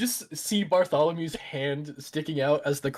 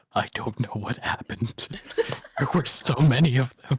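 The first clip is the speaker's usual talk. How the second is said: confidential, hushed whisper, barely voiced; 3 semitones lower than usual. Playing a dusty fighter leaning close to the shopkeeper: whispering in character. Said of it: "lean in real close and whisper".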